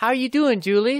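bright, breezy, chipper tone. Speaker mimics a man greeting people to fish for sympathy, imitating a chipper greeting. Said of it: "all chipper".

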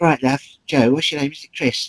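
squeaky high put-on voice. Retelling what Joe Pasquale said backstage: squeaky Joe Pasquale voice. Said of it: "he does talk like that, not quite so squeaky".

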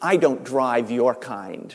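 put-on stern tone. Retelling a taxi driver refusing a passenger: imitating a stern refusal. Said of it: "said very sternly".

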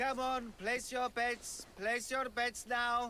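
slow, high, listless, drawn-out barker call.

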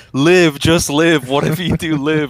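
desperate urgent yell. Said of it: "He's literally yelling".

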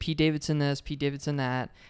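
normal talking voice

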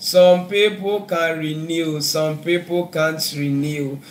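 slow, deliberate delivery.

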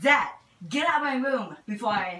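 put-on very quiet, hushed teen girl voice.

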